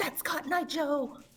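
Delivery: put-on, mock panicked whisper. Telling the others what Penelope is whispering, imitating Penelope's panicked whisper. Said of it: "Penelope is currently whispering, just very panically".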